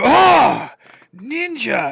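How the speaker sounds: very loud, high-pitched, rough bellowing shout. Retelling how enemy guards react on spotting you: imitating Tenchu guards spotting you. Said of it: "they'd see you and they go".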